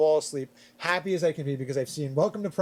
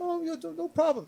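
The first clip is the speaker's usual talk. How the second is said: put-on very high-pitched voice with a French accent; 12 semitones higher, 3 dB quieter than usual. Retelling what a French exchange kid answered about Freddy Krueger: [name]'s French accent. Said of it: "French accent".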